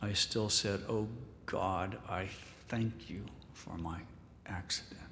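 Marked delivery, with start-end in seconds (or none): 0.9-5.0 mock anger through clenched teeth, quieter, lower. Speaker quoting a paralyzed woman's first prayer of thanks, retelling gritted-teeth anger. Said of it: "through gritted teeth with anger in my soul".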